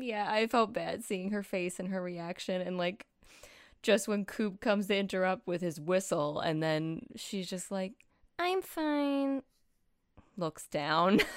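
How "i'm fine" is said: fine said very high and drawn out. Retelling a TV scene, horrible imitation of Lucy's voice. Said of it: "That's a really horrible imitation of her voice".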